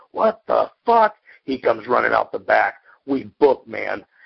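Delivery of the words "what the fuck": shrill, high-pitched, loud yell. Telling a story, quoting the dude inside: retelling a yell. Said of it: "I hear the dude inside yelling".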